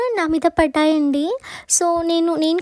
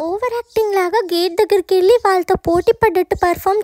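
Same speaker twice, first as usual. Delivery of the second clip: usual speaking voice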